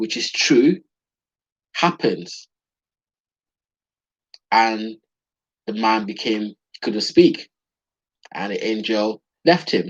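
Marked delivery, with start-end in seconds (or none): 0.0-2.5 acted-out disdainful tone. Retelling an angel's reply to a doubting old man: imitating a disdainful angel. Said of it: "you could send the disdain in his voice".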